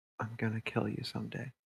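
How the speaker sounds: very quiet, hushed whisper under the breath. Voicing a kid whispering a threat to a duplicate: whispering. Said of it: "just whispers to it".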